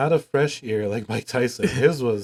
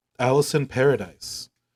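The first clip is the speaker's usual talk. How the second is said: strongly anglicized, very English pronunciation. Saying an actress's name the very english way. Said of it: "that was the very English way to say it".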